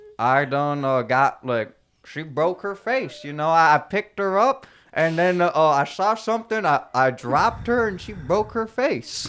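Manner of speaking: acted-out Southern accent. Retelling a failed date story, acting it out: put-on Southern accent. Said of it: "we acted out like Southern accents".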